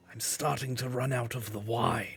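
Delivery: hushed, secretive, leaning-in half-whisper. Voicing a barkeeper leaning over to a player: half-whispering. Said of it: "leans over and whispers to you".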